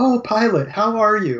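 put-on overly polite, gracious tone, high and slow. Imitating Zhaan greeting Pilot: overly polite Zhaan voice. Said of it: "She's like".

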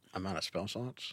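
ordinary talk

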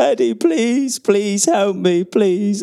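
mock tearful, desperate pleading, high and slow. Retelling a plea for help on the medical room table, imitating Darren Moore crying. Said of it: "Big Darren Moore crying on the".

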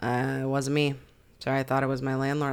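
cold, grim, lifeless, flat, dead-inside monotone. Showing how the suspect should sound confessing: imitating a cold, dead-inside voice. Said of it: "I imagine him very dead inside and very cold".

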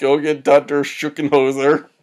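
mock loud shouted yell. Retelling a character faking a heart attack: imitating someone yelling at a receptionist. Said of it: "yells at the receptionist".

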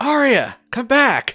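whisper that comes out too loud. Calling a party member back while sneaking: whisper that comes out too loud. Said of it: "I try to say whispering, but ... it's louder".

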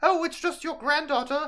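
very high, comic British woman voice. Telling a story, voicing the hunter at Grandma's door in a Monty Python woman voice. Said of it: "He's doing his best Monty Python woman voice".

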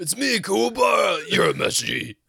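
very high, loud, shouted grating voice.

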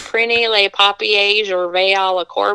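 French spoken in a very bad Southern US accent. Recalling a ninth-grade French teacher, the speaker mimics French in a bad Southern accent. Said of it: "had the worst southern accent".

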